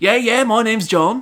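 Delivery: put-on Australian accent. Explaining a Dear John joke, voicing John's reply in an Australian accent. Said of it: "why did you put on the Australian accent?".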